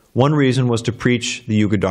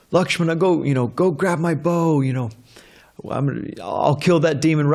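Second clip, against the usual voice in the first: furious, heated, angry, pitched-up outburst; 5 semitones higher than usual. Retelling a story, acting out a figure standing up on the bed: retelling an angry yell. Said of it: "he's yelling like this".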